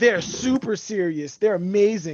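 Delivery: ordinary talk, nothing marked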